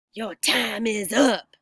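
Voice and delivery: words forced out in a hiss. Reading a story, a woman cuts off the narrator's reply: hissing. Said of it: "she hissed".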